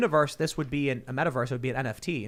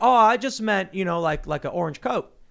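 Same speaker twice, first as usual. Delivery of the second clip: loud, solid put-on Kentucky accent, played up; 5 semitones higher, 6 dB louder than usual. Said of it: "your Kentucky accent is pretty solid".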